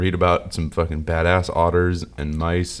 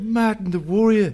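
put-on very strong, thick Liverpool accent, pitched very high. Retelling how someone said a name, in the strongest liverpool accent. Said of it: "strongest Liverpool accent I've ever heard".

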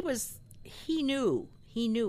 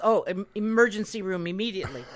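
usual speaking voice

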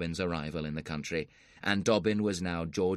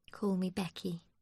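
quiet, soft, gentle delivery; 13 semitones higher, 4 dB quieter than usual. Narrator reads Becky answering Joss beside him at roulette; soft. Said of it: "she replied softly".

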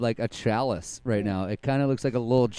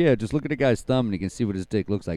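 ordinary delivery

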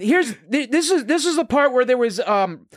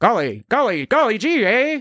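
put-on 1960s-style mid-Atlantic accent. Mocking a guy's delivery like 1960s TV, in a fake mid-Atlantic accent. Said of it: "that 1960s mid-Atlantic fake invented accent".

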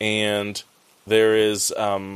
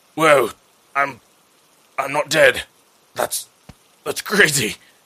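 put-on gasp, higher pitch; 4 semitones higher, 4 dB louder than usual. Retelling how a wounded man revives and speaks, acting out a gasp. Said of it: "He kind of like gasps like".

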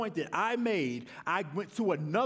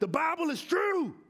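put-on Southern US accent, pitched up; 9 semitones higher than usual. Giving an example of circular reasoning, the speaker voices person A: put-on southern accent. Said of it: "I put on a southern accent".

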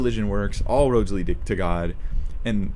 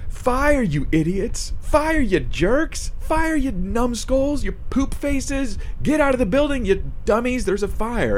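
mock very high, drawn-out screaming; 13 semitones higher than usual. Retelling the biggest jerk in the office during a fire, retelling someone screaming insults. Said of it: "he's screaming down the hallway".

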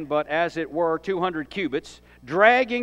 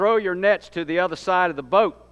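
plain

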